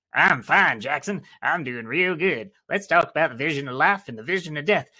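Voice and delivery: put-on loud, tiny creature voice. A storyteller voices a dust mephit answering a greeting, in a little dust mephit voice. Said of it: "Are you going to keep talking in that voice?".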